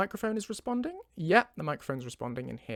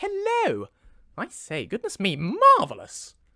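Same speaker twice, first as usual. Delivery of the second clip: unhurried, high, swooping, sing-song, drawn-out character voice; 5 semitones higher, 8 dB louder than usual. Warming up before recording, greeting party guests as Lucian: Lucian character voice. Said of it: "I need to get into character a little bit".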